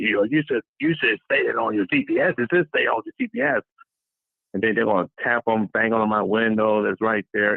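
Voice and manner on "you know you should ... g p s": nasty, swooping tone of voice. Retelling a rider's reply when asked where to be let off: imitating a nasty tone of voice. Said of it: "a nasty, nasty tone of voice".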